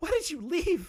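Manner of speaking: very high, frantic, very panicky voice. Reading a question aloud real quick in a very panicky voice. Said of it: "I'm gonna read this one in a very, very panicky voice".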